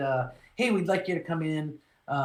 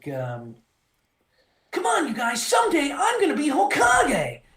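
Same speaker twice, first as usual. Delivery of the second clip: put-on young kid hero voice, much higher pitch; 10 semitones higher, 6 dB louder than usual. Showing how he voiced a young kid main character, young hero voice. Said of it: "I did it more like".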